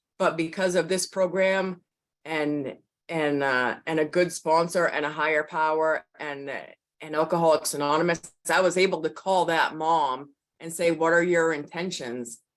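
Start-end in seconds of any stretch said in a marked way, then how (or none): none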